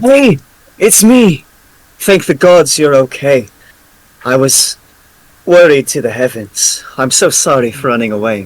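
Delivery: eager, animated, swooping, excited delivery. Character greeting a man they meet again, excited greeting. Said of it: "show excitement at meeting him, and I'm going to say".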